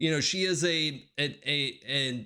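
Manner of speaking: plain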